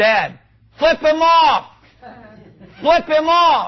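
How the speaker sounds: put-on, very high, high-pitched shouted yell. A father retells his young son urging him on during a confrontation, retelling a yell. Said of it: "he's yelling".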